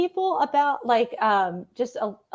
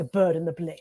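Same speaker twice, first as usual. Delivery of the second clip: grand, theatrical, low and very dramatic delivery; 7 semitones lower than usual. Showing how a book title has to be said, very dramatically. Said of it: "you have to say it very dramatically".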